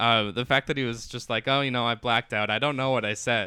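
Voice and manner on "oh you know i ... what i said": put-on facetious athlete voice. Retelling a press conference answer: imitating Aaron Rodgers, facetious. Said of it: "he's so facetious".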